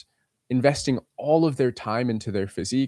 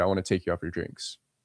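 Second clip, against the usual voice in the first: put-on smooth, sure confidence with no pausing; 6 semitones lower, 5 dB quieter than usual. Showing how he asks a girl out: zero hesitation. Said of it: "And I say it like that. Zero hesitation".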